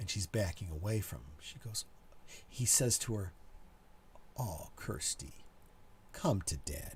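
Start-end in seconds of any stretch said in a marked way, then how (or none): 4.4-6.8 creepy, lecherous, predatory, breathy whisper. Retelling a film scene, a man pretending to be the father: creepy predatory tone. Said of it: "in that rapey kinda tone".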